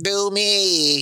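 mechanical, robotic voice-box voice. Retelling a line from a comedy sketch, imitating a smoker's robot voice.

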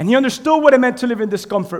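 preacher-style emphasis. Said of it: "But watch this".

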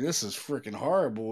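ordinary talk

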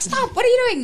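startled, high mock shout.

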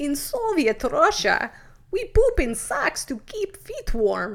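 very loud, clumsy put-on Russian accent, swooping. Retelling a joke learned from someone who did a good Russian accent, in a bad Soviet accent. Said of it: "That wasn't a great Soviet accent".

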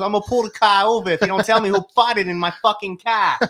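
put-on laid-on-thick Boston accent, pitched very high. Retelling what a grandmother driving the car said: imitating grandma's thick Boston accent. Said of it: "this super thick Boston accent".

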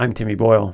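loud news anchor delivery. Signing off the show, redoing the sign-off like a news person. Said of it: "like a news person".

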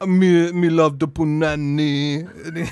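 put-on Jamaican-style accent. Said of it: "He does, like, a reggae accent".

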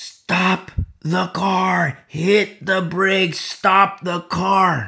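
very slow, high, drawn-out full-lung shout. Acting out a warning near a cliff, shouting at the top of lungs. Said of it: "I shout from the top of my lungs".

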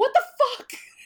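freaked-out outburst, high-pitched and loud, blurted. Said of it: "Charlotte's freaking out".

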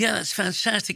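posh English delivery. Recalling a man from film shoots, imitating Chris Jackson's speech. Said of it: "That's how he speaks".

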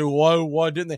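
ordinary talk

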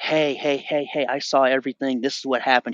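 put-on woman's yelling. Retelling what a woman on a bike yelled out: imitating a woman yelling. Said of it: "She yells out".

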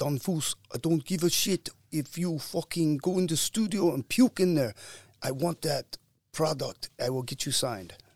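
put-on thick German accent, loud and high. Retelling what a man said about getting him signed, imitating a thick accent. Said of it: "he had this real thick accent".

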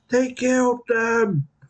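shouting in anger. Narrating what the players hear in a roleplaying scene, angry shouting. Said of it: "Angry shouting".

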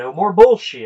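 put-on loud delivery. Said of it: "she said it loud enough that the entire Nissan dealership".

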